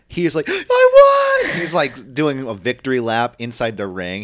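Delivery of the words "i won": near tears, very high, very loud, drawn-out "I". Retelling a wrestler's win after the match, imitating Bobby Lashley almost crying. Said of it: "Bobby Lashley fucking almost starts crying".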